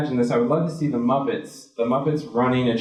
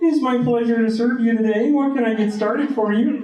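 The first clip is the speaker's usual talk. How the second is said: put-on frog puppet voice; 10 semitones higher than usual. Taking the drive-through headset in a skit and greeting a customer: Kermit the Frog voice. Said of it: "My name is Kermit the Frog".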